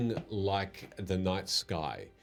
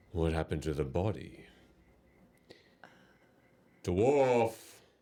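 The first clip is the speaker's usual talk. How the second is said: beastly, growling dragon voice. A game master voices a dragon questioning the dwarf, in a dragon voice. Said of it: "you hear this growl come from outside, and and this dragon says".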